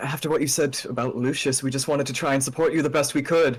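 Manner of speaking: loud yelled call. Voicing a character calling across a fight after a spell: yelling out. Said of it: "kind of yell out and go".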